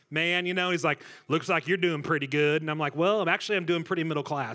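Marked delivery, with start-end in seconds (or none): 1.2-2.6 put-on rural Midwestern accent. Retelling what a guy at a gas station said, Southern Illinois accent. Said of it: "in the best Southern Illinois accent".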